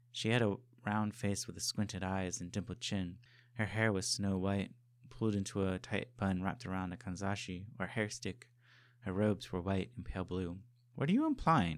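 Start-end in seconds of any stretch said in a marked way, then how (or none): 10.9-11.8 sharp, cutting, very high pitch. First-person narrator questions a scowling woman, asked sharply. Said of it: "I asked sharply".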